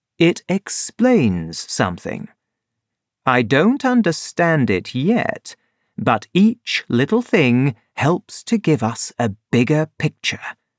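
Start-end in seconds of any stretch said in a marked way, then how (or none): none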